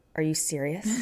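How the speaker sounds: acted dead-serious calm tone. Retelling what was said after being hit hard: retelling in a very calm voice. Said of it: "I said dead seriously in, like, a very calm voice".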